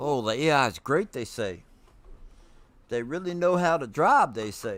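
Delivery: sarcastic, ironic tone laid on thick, jabbing. Commenting on the drivers swerving off the road: sarcastic. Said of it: "I'm being stupid, uh, sarcastic".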